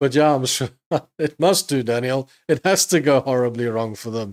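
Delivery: talking while chuckling, laughing through the words. Speaker replying to daniel about clips of scalpers, laughing while talking. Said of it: "I'm sorry, I'm laughing".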